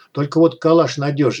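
plain

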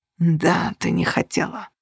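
contemptuous, hoarse, slow, cutting voice. He cuts off her apology, hoarse with contempt. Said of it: "охрипнув от презрения, перебил он".

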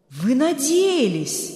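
dumbfounded, astonished, stunned outcry. Berg, hearing the doctor had hoped for this, exclaims in a stunned exclamation. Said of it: "ошеломленно воскликнул Берг".

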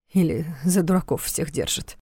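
ordinary delivery

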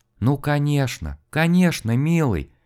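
blissful, tremulous, ardent, heartfelt whisper. A wife answers her frozen, waiting husband in a blissful, passionate whisper. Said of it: "Бесконечно счастливым голосом, проникновенно и страстно, трепетно прошептала".

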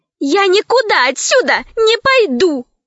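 yelling, crying out. Narrator reading a character's sudden line to the gorilla, shouting. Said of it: "вдруг закричала Лара".

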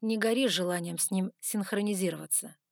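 plain

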